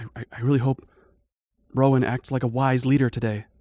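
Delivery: hushed whisper. Game master voicing a companion whispering behind the party, whispering. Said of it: "she whispers".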